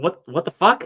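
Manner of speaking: loud, high, stunned, disbelieving exclamation. Recounting getting a red card for shouting, acting out own shock. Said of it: "I was just in absolute shock".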